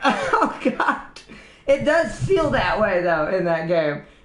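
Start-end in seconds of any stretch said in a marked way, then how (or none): 0.0-1.2 oh god as a high laughing groan. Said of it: "And I'm like".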